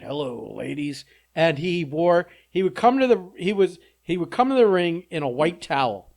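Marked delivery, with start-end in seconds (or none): 0.0-1.1 deep, rough, low voice with a creak. Describing a wrestling character's catchphrase: deep Val Venis voice. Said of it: "he had this deep voice, and he said".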